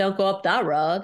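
accent from Maine. Trying out the accent after saying it is hard, in a Maine accent. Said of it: "Why can't I do a Maine accent?".

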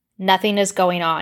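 plain reading voice

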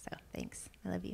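soft, unvoiced whisper.

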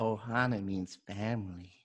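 soft, creepy, pervy-sounding murmur. Taking turns at Disney voices on a podcast: failed Stitch impression. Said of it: "that didn't sound like Stitch. You sounded like a creep".

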